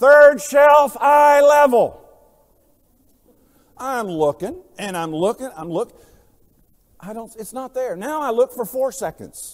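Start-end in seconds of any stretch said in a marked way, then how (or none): 0.0-2.0 loud, high, yelling voice. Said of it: "and she yells back".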